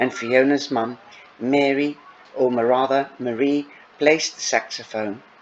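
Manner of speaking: plain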